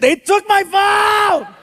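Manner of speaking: mock very high, stretched-out, drawn-out holler. Retelling how the son turned around and yelled at the ground: imitating son yelling. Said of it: "he yells at the ground and he goes".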